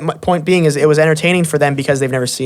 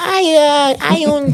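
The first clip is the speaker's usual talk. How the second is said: very high, very slow, drawn-out sweet voice; 11 semitones higher than usual. Imitating a fighter's post-fight interview: imitating Anderson Silva's soft voice. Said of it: "sound like".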